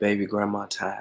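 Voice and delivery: small, quiet, sensitive, fragile, delicate voice. Retelling what the speaker's grandma said, holding their hand: imitating grandma's quiet, delicate voice. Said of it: "small, sensitive, quiet, delicate voice".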